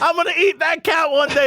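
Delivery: very high, piping, threatening creature voice. Retelling a Chupacabra's threat about eating the cat: imitating a cussing Chupacabra. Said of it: "He cussed me out".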